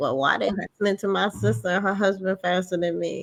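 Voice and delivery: ordinary talk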